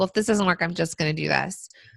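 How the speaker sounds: ordinary talk, nothing marked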